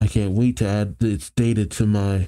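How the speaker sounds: plain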